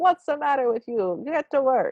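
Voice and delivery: put-on very traditional Italian accent. Describing a little Italian character in what they're watching: traditional Italian accent. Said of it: "he has a very traditional Italian accent".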